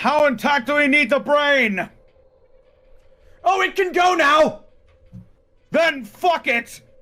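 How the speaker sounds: screaming out.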